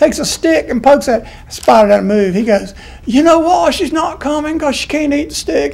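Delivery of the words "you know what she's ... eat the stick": put-on Australian accent, pitched higher than normal. Retelling a spider story, quoting him in an imitated australian accent. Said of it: "I'm going to quit saying my Australian accent".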